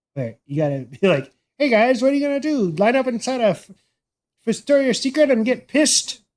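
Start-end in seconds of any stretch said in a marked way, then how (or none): 1.6-6.2 terrible fake Irish accent, pitched up. Retelling a story about people lining up outside a store: bad Irish impression. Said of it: "That's my best Irish impression right there".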